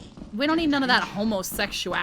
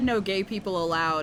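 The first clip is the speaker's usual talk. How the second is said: usual speaking voice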